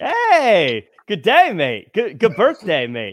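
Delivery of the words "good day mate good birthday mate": bad put-on Australian accent, much higher, louder. Co-host wishes the Australian correspondent a happy birthday, bad Australian accent. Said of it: "That's the worst accent I've ever heard".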